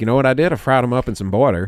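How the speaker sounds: put-on Southern accent, country-sounding. Imitating two callers who talk to each other: imitating a Southern accent. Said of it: "two Southern accents go like".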